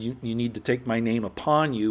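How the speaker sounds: ordinary talk, nothing marked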